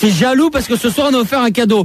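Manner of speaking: mock scolding.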